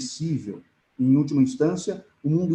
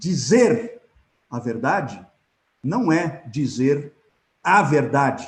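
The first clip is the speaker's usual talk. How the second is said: stress on first dizer and final verdade. Showing which words to underline in a sentence, stress on dizer and verdade. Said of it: "eu sublinharia o primeiro dizer e sublinharia o último a verdade, para dar o tom".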